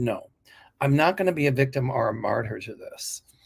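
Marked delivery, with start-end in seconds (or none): none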